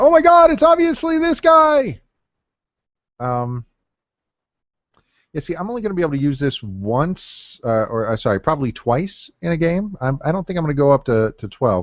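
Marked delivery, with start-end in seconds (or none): 0.0-2.0 high, loud mock scream. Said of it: "I'm sure somebody's screaming".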